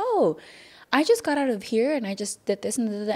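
mock bright, breezy, high, sing-song happy voice. Retelling how they used to answer the listener's questions: imitating own happy voice. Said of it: "I would say it with like such a happy voice".

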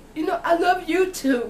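crying through words, very high and loud. Telling the audience they are family and loved, crying. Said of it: "I'm sorry if I'm crying".

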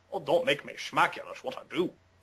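soft, hushed screen-star voice. Running through impressions: Sean Connery impression. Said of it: "little Sean Connery for you".

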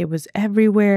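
ordinary talk

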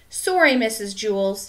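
plain

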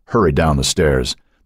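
ordinary delivery

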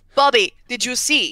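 bad, failed French accent. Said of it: "I can't do a French accent".

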